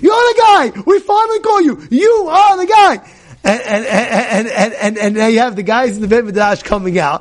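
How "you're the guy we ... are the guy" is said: mock very high, shrill, noisy screaming. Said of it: "He's making so much noise".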